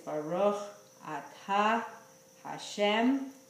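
slow, deliberate, word-by-word pronunciation. Showing how he says the Netilas Yadayim blessing, slow, word by word. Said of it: "I pronounce each word slowly, like this".

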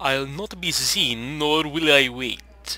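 bad, put-on Transylvanian accent. Voicing a game character told to wait their turn at the hospital, in a bad Transylvanian accent. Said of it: "that was a bad Transylvanian accent".

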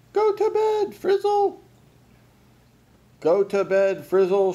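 high, loud yell, said twice over. Reading a noisy scene: a character shouts over the din, shouting. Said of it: "Shouted Gus".

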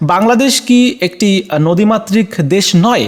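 ordinary talk, nothing marked

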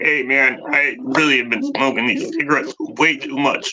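strained put-on frog voice. Speaker playing a frog character, in a frog voice like needing a trach. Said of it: "It sounds like I should have a trach".

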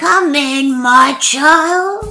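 high squeaky voice. Narrator reads the wolf, pretending to be the grandmother, calling the girl in: squeaky voice. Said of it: "said the wolf in a squeaky voice".

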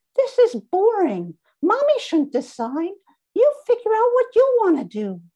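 very high, loud, bright squeaky voice. Holding up the doll, the narrator speaks to Lily in a squeaky Emmy doll voice. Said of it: "I said in a squeaky voice".

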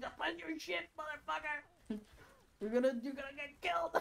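mock all-out scream, shrill and very high. Recounting a game where a teammate stopped playing Lucio: retelling screaming at screen. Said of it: "screaming at the fucking screen".

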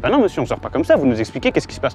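ordinary talk

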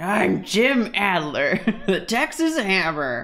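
gruff voice, slow delivery. Imitating Jim Adler's commercial, gruff way of speaking: Jim Adler impression, gruff voice. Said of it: "he has a very gruff way of speaking".

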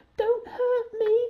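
very high, frightened, whimpering voice. Narrator reads the frightened lion's plea to the mouse, whimpering. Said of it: "he whimpered".

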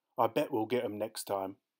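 ordinary delivery

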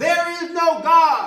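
very high, very loud angry holler. Telling a joke, acting out an angry atheist neighbor: acting out an angry shout. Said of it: "he would shout".

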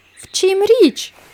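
anxious, alarmed. The firefighters ask what's wrong after the horses suddenly stop, worried. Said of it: "стурбувалися пожежники".

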